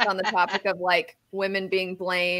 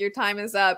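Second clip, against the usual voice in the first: ordinary talk, nothing marked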